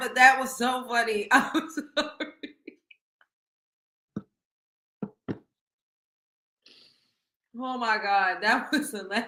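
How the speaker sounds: talking through laughter. Reacting to a funny clip, laughing while talking. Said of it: "I don't mean to laugh".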